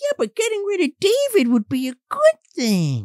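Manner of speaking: creepy, high-pitched, sly puppet voice.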